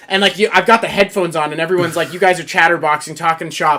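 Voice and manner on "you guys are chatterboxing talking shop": normal talking voice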